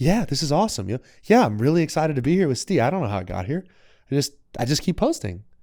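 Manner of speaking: high, carefree, blissfully unaware chatter. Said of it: "blissfully unaware of how things are going".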